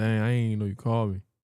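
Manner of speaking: ordinary delivery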